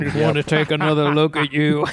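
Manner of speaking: mock tough-guy macho voice. Quoting a line for the churro sheriff: Jackson Maine voice. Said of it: "That's the line".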